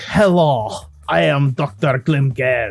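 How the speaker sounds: attempted, put-on German accent. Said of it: "trying to do a German accent for Herr Doctor Glim".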